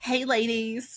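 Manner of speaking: put-on slow, unhurried Southern accent.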